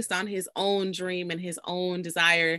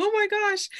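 sudden, alarmed, very high panicked exclamation; 14 semitones higher than usual. Retelling a film scene where Joe panics: imitating Joe panicking. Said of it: "and Joe's panics".

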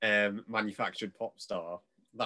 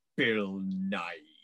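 mock-venomous delivery. Retelling a friend's answer about who got the role instead: mock-venomous tone. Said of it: "goes in the most venomous tone of voice".

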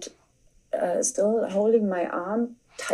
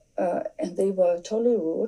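plain

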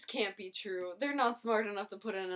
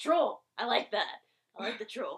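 put-on gruff comedic voice, louder; 3 semitones higher, 6 dB louder than usual. Retelling a TV scene, doing the troll character: Danny DeVito impression. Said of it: "You do a really good Danny DeVito impression".

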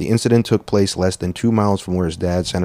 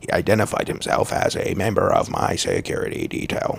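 gravelly, creaking put-on voice; 5 dB quieter than usual. Retelling how an armed man identified himself, imitating his voice. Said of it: "I'm doing his voice".

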